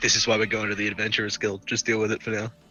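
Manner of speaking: in-character hushed whisper. Hush whispering to a companion in a game scene: in-character hushed whisper. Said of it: "hush whisper to Ada".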